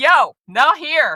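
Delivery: high, slow, loud, firm delivery.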